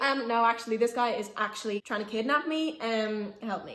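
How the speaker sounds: usual speaking voice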